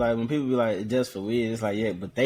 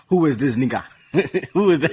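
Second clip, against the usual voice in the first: loud, clumsy, badly faked Russian accent; 4 semitones higher, 5 dB louder than usual. Acting out a Russian asking about a stranger: bad put-on Russian accent. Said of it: "Is that African, uh, accent?".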